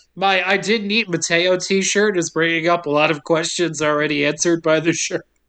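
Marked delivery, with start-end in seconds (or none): none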